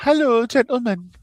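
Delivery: very high-pitched put-on voice. Reading a chat greeting aloud in a put-on voice: high-pitched voice for Tiff. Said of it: "I'll go high".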